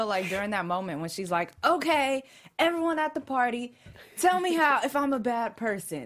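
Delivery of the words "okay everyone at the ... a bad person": loud, high, raised voice calling out. Retelling a party scene where Nadia asks everyone: Nadia voice. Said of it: "in her voice".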